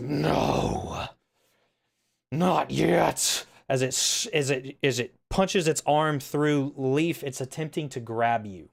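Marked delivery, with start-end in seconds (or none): 0.0-3.5 huge, looming giant voice, rough and creaky. Voicing the thing punching through the portal to grab the party, in a giant looming voice. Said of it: "a giant looming, looming voice that says".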